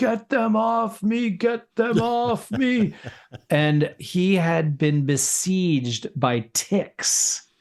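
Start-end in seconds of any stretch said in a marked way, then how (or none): 0.0-2.9 mock desperate, panicked yell, very high. Recounting what a man covered in ticks yelled when found, retelling a yell. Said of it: "he was yelling".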